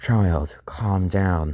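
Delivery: play-acted, gentle, very calming, soothing voice. A character comforts a child starting to tear up: very calming voice. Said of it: "with a very calming voice".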